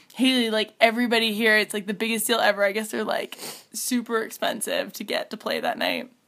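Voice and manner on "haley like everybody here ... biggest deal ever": ordinary talk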